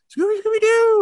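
squeaky tiny mouse voice. Retelling a cartoon scene where a mouse grabs the snack: little mouse voice. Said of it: "in a little mouse voice".

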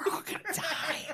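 mock frightened whisper. Retelling what Carrie whispered during a flight: imitating Carrie whispering. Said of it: "turn around and whisper to me".

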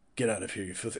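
stilted dubbed-movie delivery. Acting out a hostile character in an impression of badly dubbed film dialogue, telling someone to leave; stilted dubbed-movie delivery. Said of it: "Nope, not dubbed enough".

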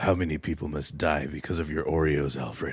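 very deep, low, quiet, hushed masked superhero voice. In a comic bit, the speaker addresses Alfred in the Batman voice. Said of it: "He pulls the Batman voice".

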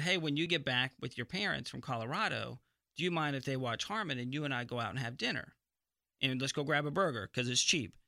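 usual speaking voice

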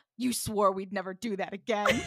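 aghast, mortified, gasping voice. Retelling a show scene where Freddie is mortified: imitating a mortified gasp. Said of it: "Freddie is mortified and goes".

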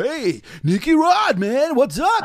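silly, swooping, drawn-out radio DJ voice. Mocking radio hosts doing podcasts: imitating a radio host's funny voice. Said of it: "they do the funny voice".

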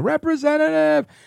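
mock, very high-pitched screamed word. Retelling screaming at a phone menu to reach a representative: retelling a scream. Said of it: "I'm screaming".

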